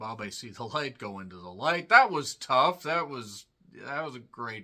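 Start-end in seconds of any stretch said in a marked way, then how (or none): none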